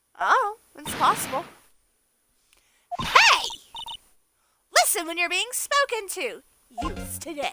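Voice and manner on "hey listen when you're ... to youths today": throat-straining, voice-tearing female character voice. Voicing a character whose voice strains the throat: throat-straining female character voice. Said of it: "I hate doing her voice 'cause her voice always tears my voice".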